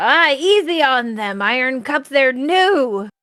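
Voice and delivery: called-out shout with drawn-out "new". Voicing a tavern patron calling to the innkeeper: tavern patron shouting out. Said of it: "kinda shout out".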